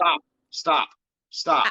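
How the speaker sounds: shouting. Cutting off the other speaker during a heated argument: yelling. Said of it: "without you yelling at me".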